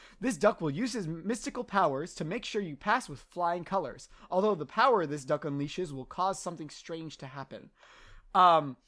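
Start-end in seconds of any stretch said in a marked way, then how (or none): none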